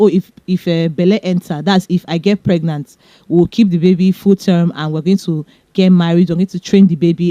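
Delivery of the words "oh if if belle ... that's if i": ordinary delivery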